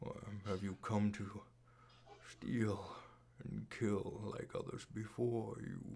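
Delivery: hushed, whispered, mysterious voice. Voicing an unseen character speaking to a player inside their head: voice inside your head. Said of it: "you hear this voice in your head".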